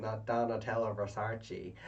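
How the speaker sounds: put-on American accent. Retelling a contestant mocking how her name was said: imitating an American accent. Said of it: "with, like, an American accent".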